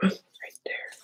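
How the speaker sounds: very soft whisper. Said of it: "Why am I whispering?".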